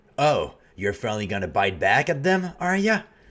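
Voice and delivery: put-on intense New York accent. Player voicing a character answering Seti in a role-play game, intense New York accent. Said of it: "like an intense New York accent".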